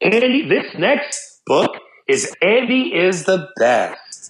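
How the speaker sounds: slow storybook reading voice. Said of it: "I read it like it's a P B S, uh, Mister Rogers reading to children".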